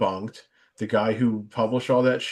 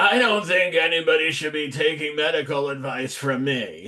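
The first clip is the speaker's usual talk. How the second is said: annoying, whiny, high-pitched put-on voice; 5 semitones higher than usual. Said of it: "R F K is obviously much more annoying".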